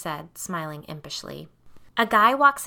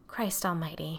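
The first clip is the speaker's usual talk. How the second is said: breathed out, quieter; 2 semitones lower, 9 dB quieter than usual. After Carrie's admission, the narrator responds, breathed. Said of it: "I breathed".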